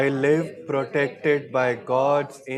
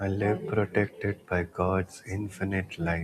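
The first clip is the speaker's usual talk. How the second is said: gently softened, hushed, softer voice; 6 semitones lower, 8 dB quieter than usual. Leading an affirmation that a second voice repeats, now in a softer voice. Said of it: "In a softer voice now".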